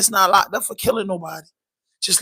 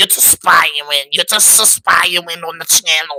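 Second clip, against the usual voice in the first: put-on Boston accent; 4 semitones lower than usual. Talking to viewers about his channel, switching into a put-on Boston accent. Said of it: "I gotta talk like I'm from Boston".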